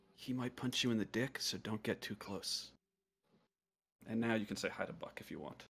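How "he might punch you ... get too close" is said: said quietly, hushed. Player's character shaking a newcomer's hand in a tabletop game, speaking quietly. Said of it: "I'll say quietly".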